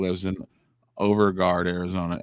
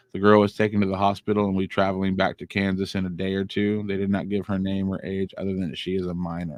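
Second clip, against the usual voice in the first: plain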